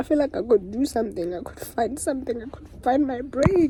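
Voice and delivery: speaking through tears, crying. A creator talks about quitting YouTube for short-form content, crying while talking. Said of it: "Why am I fucking crying?".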